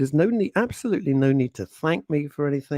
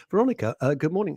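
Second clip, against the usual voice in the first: sort of Edinburgh accent, put-on, mock; 2 semitones higher than usual. On the show, greet Veronica Curran, who expects it, in a sort of Edinburgh accent. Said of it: "say hello in a sort of Edinburgh accent".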